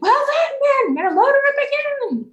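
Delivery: very high-pitched, loud shouting. Voicing a ship captain rallying the crew: captain shouting. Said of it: "you can hear the captain shouting".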